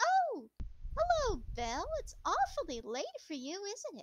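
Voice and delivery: tiny, very high-pitched, sing-song little voice. Narrator voicing a small voice inside a doll's head greeting belle: very small voice. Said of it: "a very small voice inside goes".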